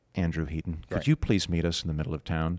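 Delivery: deep, low, very polite announcer voice. Imagining an alien ship announcing over a PA system: imitating a very polite alien PA voice. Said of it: "a very polite voice comes over this giant P A system".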